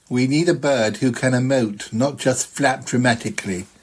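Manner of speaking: put-on doubtful, sceptical film director voice. Recalling what the director said about casting a bird, in a director voice. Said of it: "That was a good voice".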